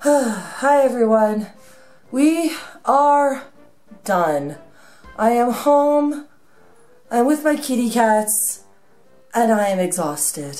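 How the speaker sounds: hoarse, worn-out, nearly gone voice. Greeting viewers after getting home exhausted: voice nearly gone. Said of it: "my voice is practically gone".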